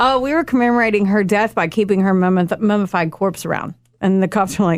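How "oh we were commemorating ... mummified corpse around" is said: ordinary talk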